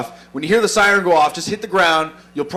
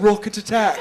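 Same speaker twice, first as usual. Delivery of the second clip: put-on British female announcer voice with British accent; 4 semitones higher, 4 dB quieter than usual. Imitating the rocket attack alarm in Kandahar, Afghanistan; British woman's voice. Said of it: "With a British woman's voice".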